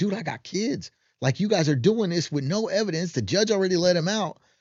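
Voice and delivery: put-on, high-pitched screaming rant. Retelling a video posted by Tate: imitating Tate screaming. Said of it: "Tate's screaming at the camera like".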